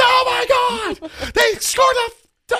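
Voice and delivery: unbridled commentator yell, very high and stretched out. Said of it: "he lets all of his emotions out".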